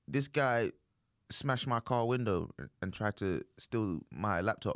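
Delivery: ordinary delivery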